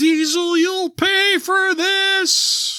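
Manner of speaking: put-on, very high, loud, slow, drawn-out wail, done badly. Recapping a wrestling show's ending with a horrible Paul Bearer impersonation. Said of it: "horrible, horrible impersonation of Paul Bearer".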